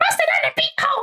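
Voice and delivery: very high, squeaky little cartoon character voice. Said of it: "but with a Toad voice".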